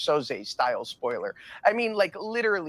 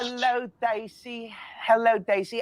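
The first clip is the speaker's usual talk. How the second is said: put-on British accent, pitched up; 8 semitones higher than usual. A talk-show guest greets daisy: put-on british accent. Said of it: "perfecting my British dialect for you".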